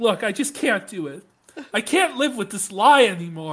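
earnest, sincere, heartfelt tone. Speaker mimicking a man confessing to misconduct, in a mock confessional tone. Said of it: "This is his tone as he's".

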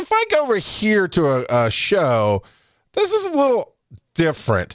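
ordinary delivery

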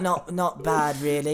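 shy, lifeless, dull voice, soft and slow. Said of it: "That's how dull he is".

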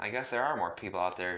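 plain

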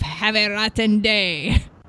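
loud, nasty, spat-out cartoon villain voice. Retelling someone doing Mario character voices, now in the Wario voice. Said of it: "he was doing like the Wario voice".

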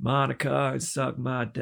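very slow delivery, every word drawn out. Retelling a public apology as an impression: Bill Clinton impression. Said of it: "a good impression of Bill Clinton".

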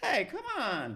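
squeaky, very high cartoonish voice. Imitating an actor who sounds like a cartoon: imitating a high-pitched cartoonish voice. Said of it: "with the high pitch".

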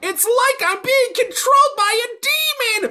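very high, loud, shrieked scream. Retelling a TikTok clip of Jinx: imitating Jinx screaming. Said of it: "it's Jinx screaming".

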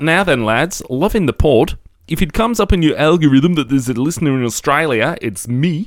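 put-on South African accent. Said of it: "I've gone South African".

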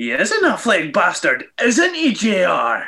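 weird, swooping sing-song voice, pitch swinging widely. Quoting what Jericho said back to JR, in Jericho's weird voice. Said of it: "in a weird voice".

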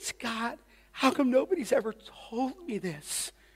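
acted tearful sobbing. Retelling what a sobbing friend said to him, imitating someone sobbing. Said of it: "and so she's sobbing".

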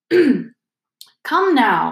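upbeat, buoyant, cheery cry. A teacher bounds into the room before a staring class, crying out, beaming. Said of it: "he cried, beaming around him".

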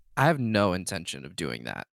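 firm, stern, unbending tone with swooping pitch. Voicing a nervous character answering a threat, looking him in the eye: stern. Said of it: "just very sternly just goes".

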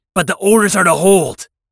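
loud shout. A mech pilot under fire answers a fellow pilot, shouting back. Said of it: "I shouted back".

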